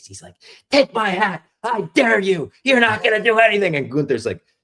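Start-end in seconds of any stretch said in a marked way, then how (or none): 0.7-3.7 put-on shrill, very high, loud child's scream. Retelling a front-row kid's taunt before the match: imitating a kid screaming. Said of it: "He's screaming in Gunther's face".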